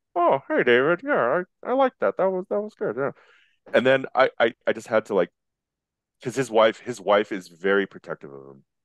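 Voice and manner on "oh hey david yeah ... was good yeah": very high-pitched, humble, modest-sounding voice. Retelling meeting George Lucas and quoting his reply: soft-spoken George Lucas voice.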